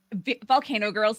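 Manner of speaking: ordinary talk, nothing marked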